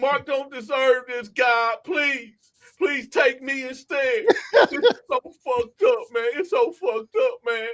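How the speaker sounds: mock tearful, crocodile-tear sobbing plea. Retelling how a man prayed over mark, the speaker mimics tearful praying. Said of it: "Big crocodile tears".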